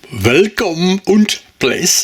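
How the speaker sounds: put-on slow, poor German accent.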